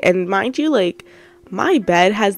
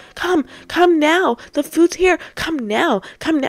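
high-pitched, urgent, hustling voice; 9 semitones higher than usual. Retelling how mom, who had yelled from the stairs, rushed the speaker down: imitating mom rushing someone. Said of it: "trying to rush me down the stairs".

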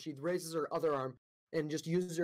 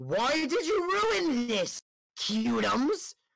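furious, high, raised voice; 8 semitones higher, 6 dB louder than usual. Game master as a woman blocking a player's shield, angry. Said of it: "she looks very angry and looks directly into your eyes and goes".

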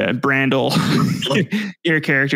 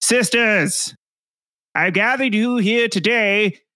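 shouted loudly at much higher pitch; 8 semitones higher than usual. Game master voices an Amazonian woman addressing her sisters; shouting Amazonian woman voice. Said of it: "a very attractive looking Oonga Boonga woman, Amazonian woman".

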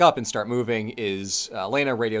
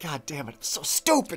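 mock muttering under breath, higher and quieter; 5 semitones higher, 4 dB quieter than usual. Recapping a game scene, acting out a character muttering under his breath. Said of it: "He mutters to himself under his breath".

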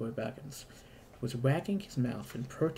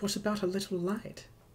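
apologetic, sorry-sounding, pitched-up, small voice; 7 semitones higher than usual. Reader voices Bilbo's question to Thorin and the dwarves, apologetically. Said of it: "Said Bilbo apologetically".

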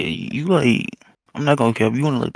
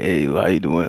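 fake deepened voice; 6 semitones lower than usual. Admitting he deepens his voice with people, showing how he greets someone: fake deepened voice. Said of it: "I'll just start talking like that".

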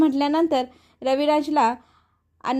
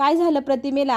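plain

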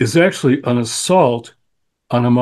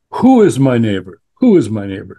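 put-on Washington lawyer voice; 3 dB louder than usual. Retelling the lawyer's question to Jesus, in a Washington lawyer tone. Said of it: "a Washington lawyer. I can tell that tone of voice".

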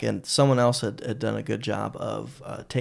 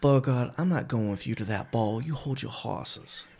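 put-on sassy Southern belle voice; 4 dB quieter than usual. Showing how to say 'hold your hosses', sassy southern belle voice. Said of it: "you say it like a sassy Southern yeah. belle".

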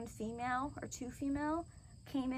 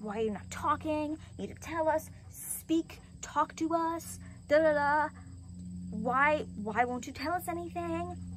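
mock angry, loud, insistent demanding tone; 4 semitones higher, 5 dB louder than usual. Retelling how someone came in and got mad at her, imitating someone getting mad. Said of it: "they got mad at me".

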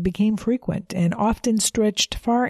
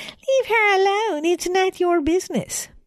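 high, mocking parroting tone; 11 semitones higher than usual. The tallest boy mimics Sandy, mocking her in a fake voice. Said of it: "calling out in a fake voice".

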